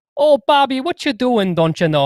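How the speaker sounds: put-on very high, loud Wisconsin accent. Speaker recalls the mom in the cartoon Bobby's World, doing her Wisconsin accent. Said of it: "introduced to the Wisconsin accent".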